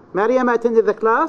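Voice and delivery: voice lifts up on class. Giving an intonation example sentence: rise on class. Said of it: "So you raise your voice on class".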